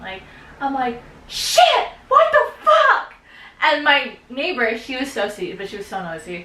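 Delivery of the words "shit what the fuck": very high, very loud, shrill, drawn-out panicked screaming. Retelling the moment the phone started dinging in their room, retelling their own screaming. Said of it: "And I'm fucking screaming".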